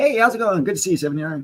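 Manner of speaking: put-on sweet friendly voice, very high pitch. Greeting a chat viewer after saying he'll put on his other face: putting on a fake friendly face. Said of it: "Let me put on my other face".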